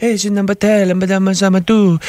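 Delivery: put-on sultry French accent. Contrasting France and Quebec accents, speaker imitates the France one, sexy French-from-France accent. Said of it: "the France accent is more like".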